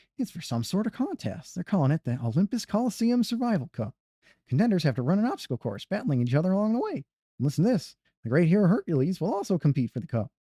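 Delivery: high-pitched cricket character voice. Streamer voice-acting game dialogue aloud, doing a Jiminy Cricket voice. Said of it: "I got to get in my Jiminy voice".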